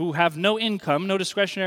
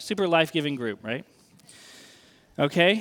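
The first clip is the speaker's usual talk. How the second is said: normal talking voice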